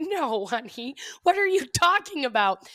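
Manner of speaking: put-on puzzled old lady voice, slow and high. Retelling a video of an older woman with glasses in her mouth: imitating an old woman with glasses in her mouth. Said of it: "has glasses hanging out of her mouth. She goes like".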